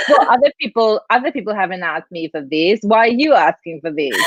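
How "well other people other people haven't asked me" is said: plain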